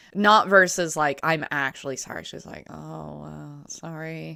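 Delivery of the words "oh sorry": put-on awkward tone, much quieter. Describing a woman's apology that isn't sincere: imitating an awkward sorry. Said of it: "Like an awkward".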